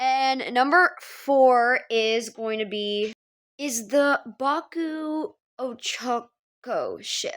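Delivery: unhurried, slow, deliberate delivery with drawn-out words. Announcing number four on a ranked list, said slowly. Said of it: "I only said that slowly".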